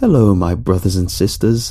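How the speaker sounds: ordinary delivery, nothing marked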